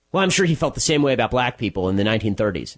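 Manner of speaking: ordinary talk, nothing marked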